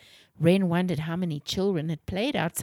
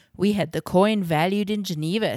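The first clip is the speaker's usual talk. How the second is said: ordinary delivery, nothing marked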